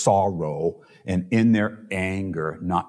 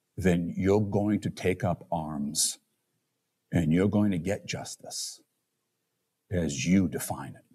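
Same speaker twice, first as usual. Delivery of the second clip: lowered, soft, gentle voice; 5 dB quieter than usual. A speaker addresses the audience; lowered, gentle voice. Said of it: "lower my voice and get as gentle".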